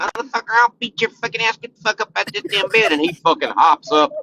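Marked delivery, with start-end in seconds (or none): 0.0-2.9 tiny, high, squeaky chipmunk voice. Retelling how someone small orders a teen out of bed: imitating a squeaky chipmunk voice. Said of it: "speak like a little fucking chipmunk".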